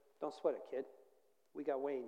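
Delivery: normal talking voice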